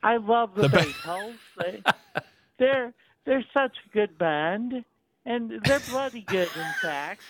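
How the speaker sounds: British accent, pitched a bit high. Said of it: "it's a British accent, like the Beatles".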